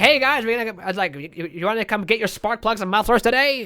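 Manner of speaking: very nasal announcer voice. A video maker demonstrating a character he invented, in a really nasally voice guy. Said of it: "really nasally kind of voice guy".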